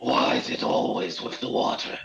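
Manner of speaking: hushed, private grumble muttered under the breath. Voicing a character muttering to himself: muttering under breath. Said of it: "Gore says to himself under his breath".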